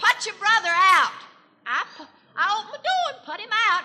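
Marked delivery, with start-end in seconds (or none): 0.0-1.1 put-on hollered voice. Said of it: "she hollered at me".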